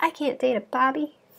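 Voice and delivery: high put-on Southern accent. Imitating what the girlfriends say after a breakup, in a Southern accent. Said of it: "why they have to have a Southern accent".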